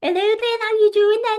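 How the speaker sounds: put-on terrible, thick Liverpool accent, very high and loud. Recalling her eleven-year-old self at Liverpool Girls College: terrible Liverpool accent. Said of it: "I had a terrible Liverpool accent".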